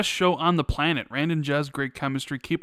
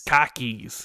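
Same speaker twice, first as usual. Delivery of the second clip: attempted, put-on Boston accent. Asked to try a boston accent, saying the phrase in a boston accent. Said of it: "Can you do a Boston accent?".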